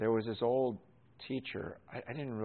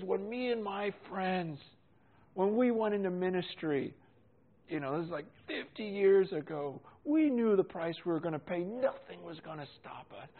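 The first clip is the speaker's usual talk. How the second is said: put-on tearful old man voice; 9 semitones higher, 3 dB louder than usual. Speaker quotes an older man who was crying; retelling an old man crying. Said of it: "And he's crying".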